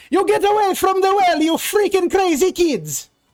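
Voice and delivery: shrill, very high, loud angry yelling. Voicing a rat folk man yelling at kids from his roof: rat folk man yelling. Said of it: "yelling at you from atop this home".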